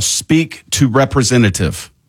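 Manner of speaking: plain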